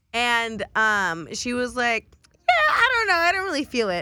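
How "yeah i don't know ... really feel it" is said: very high, swooping, quick, shrill sing-song voice. Retelling what she said, doing an impersonation of Joya. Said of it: "Joya yeah, impersonation".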